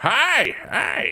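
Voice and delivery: put-on very high, loud old man voice. Voicing an old man who greets the four players: old man voice. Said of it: "you hear an old man".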